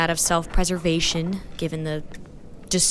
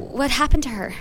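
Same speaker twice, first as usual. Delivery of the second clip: stuttering at a much higher pitch; 8 semitones higher than usual. Just come round, she asks the doctor a question, stuttering. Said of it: "she stuttered".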